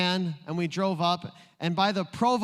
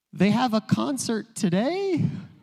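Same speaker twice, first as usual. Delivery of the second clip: every phrase ending with a rising, questioning tune; 4 semitones higher, 3 dB louder than usual. Retelling how his wife asks for things, imitating wife's soft voice. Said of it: "my wife has a very soft voice".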